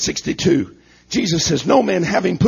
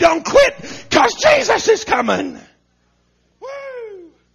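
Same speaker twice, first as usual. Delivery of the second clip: very high, swooping preacher-style scream. Preaching, hoping to infuse some hope this morning: screaming. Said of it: "I'm screaming, aren't I?".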